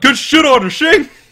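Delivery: shrill, very high yell at full volume. Recalling someone standing up at a lunch tournament, retelling a yell. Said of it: "stood up and yelled".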